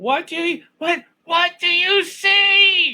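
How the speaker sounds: very high, loud, shrill scream, stretched out. Voicing her calling out to you over the wind, screaming over the wind. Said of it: "she's trying to scream over the wind".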